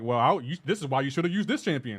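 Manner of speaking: mock insulting, condescending tone. Complaining about a player's advice, mimicking him in a mock-condescending tone. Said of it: "you do it in the condescending, insulting way".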